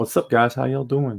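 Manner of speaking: bad, terrible put-on Russian-accented voice. Greeting viewers while chatting: terrible Crazy Russian Hacker impression. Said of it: "my terrible impression of the guy".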